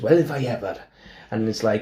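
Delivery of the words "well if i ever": put-on Carmarthen Welsh accent. Retelling how a talk show host imitated his grandfather: Carmarthen Welsh accent. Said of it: "tried to imitate his grandfather".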